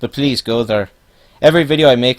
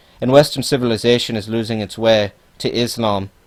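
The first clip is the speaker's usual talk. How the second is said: normal talking voice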